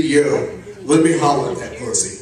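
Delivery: plain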